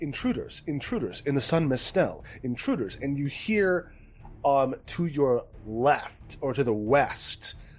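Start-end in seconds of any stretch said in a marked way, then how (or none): 0.0-3.0 automated building alarm voice. Describing a room whose lights turn red as intruders appear, automated alarm voice. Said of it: "a automated um, voice is like".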